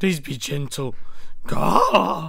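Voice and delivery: loud cartoon dog voice. Voicing a pet again after being asked to repeat it: Scooby-Doo-like voice. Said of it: "That sounds like Scooby-Doo".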